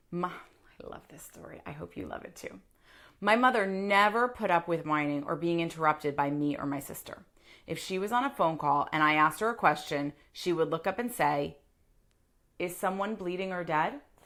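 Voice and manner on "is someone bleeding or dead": mock flat deadpan delivery, quieter. Retelling what mother said when interrupted on phone calls, imitating mom's deadpan question.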